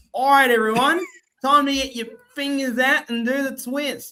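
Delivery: broad, high, thick Australian accent. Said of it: "if they sounded truly Australian".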